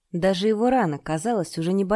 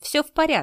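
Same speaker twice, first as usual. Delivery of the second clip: glad, cheerful, joyful, pitched up; 7 semitones higher than usual. Yang Jinming answers Li Yun's worried question, joyful. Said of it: "радостно произнес Ян Джиньмин".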